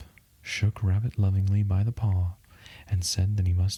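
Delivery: ordinary delivery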